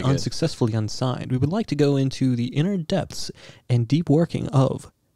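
put-on public radio announcer voice. Speaker announcing the show after saying he'll get his NPR voice. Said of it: "Let me get my NPR voice".

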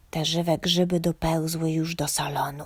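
whispering. Mi leans over the wardrobe's edge and warns Homek, whispered. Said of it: "szepnęła".

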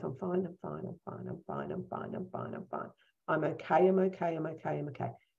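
steady, repeated, hushed mutter under the breath. Showing the words once repeated when triggered at work: imitating muttering under breath. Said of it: "I would just be like this under my breath".

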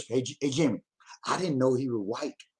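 hushed, quiet half-whisper under the breath. Telling another speaker something he didn't know before: half-whispering. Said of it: "I'm gonna whisper".

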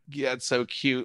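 ordinary delivery

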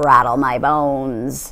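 hushed, eerie, ghostly parrot voice, "bones" drawn out. Asked what else it can say, a parrot answers Matilda, imitating a spooky voice. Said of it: "giving a wonderful imitation of a spooky voice".

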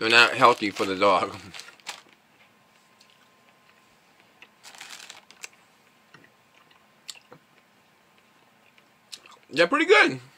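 talking with mouth full, chewing. Eating an orange mid-explanation, talking while chewing. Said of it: "I'm trying to talk while I'm chewing".

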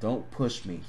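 threatening, menacing tone. Reading a story, a man warns a woman: menacing warning. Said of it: "he warned menacingly".

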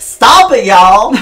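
put-on hillbilly voice. Playing a character who bangs a drum to stop a fight: hillbilly uncle voice. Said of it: "like your hillbilly uncle".

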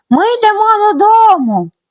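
loud, very high, full-voice call. As Pippi calling for Mr. Nilsson while the bull sleeps, calling out at full voice. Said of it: "загукала вона на повний голос".

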